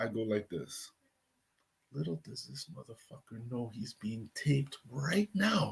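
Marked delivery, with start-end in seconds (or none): 1.9-5.7 put-on mutter under breath, quieter. Retelling a phone call, what was said while on hold: retelling muttering under breath. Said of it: "So under my breath".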